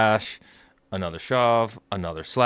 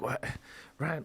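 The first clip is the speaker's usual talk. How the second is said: put-on distraught, stressed voice, higher and quieter; 5 semitones higher, 14 dB quieter than usual. Retelling how a stressed-out coach reacted: imitating a distraught coach. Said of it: "distraught a little bit, like, stressed out".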